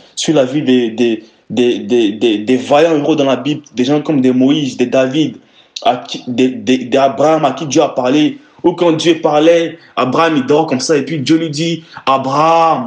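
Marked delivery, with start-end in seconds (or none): 12.1-12.9 put-on booming divine voice, like in films. Showing how god calls a sleeping abraham in films: god's voice in bible films. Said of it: "avec cette voix-là".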